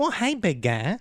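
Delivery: very high, squeaky voice, pitch pushed way up. Doing a requested impression after being told it was great: Urkel voice. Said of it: "Would you be willing to do it?".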